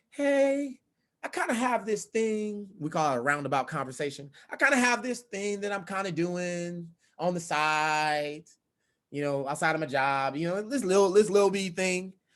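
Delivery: slow, flat, passionless, low-energy, unenthusiastic. Speaker demonstrating how a pitch sounds without passion: low-energy, no passion. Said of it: "do you sound like this?".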